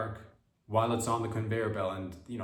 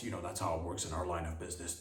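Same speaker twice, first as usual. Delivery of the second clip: really deep, low, bass-heavy voice; 3 semitones lower, 6 dB quieter than usual. Acting out a smoking tampon's line: really deep voice. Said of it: "talk in a really deep voice".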